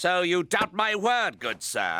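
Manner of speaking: snide, sarcastic, falsely courteous mock-polite tone. In a role-play scene, a character told his excuses sound made up replies: sarcastic. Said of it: "I use good sir sarcastically".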